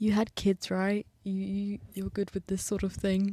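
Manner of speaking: hushed, quick whispering. Recalling approaching a child and asking a companion for help, retelling a whisper. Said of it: "I sort of whispered to Emanuela".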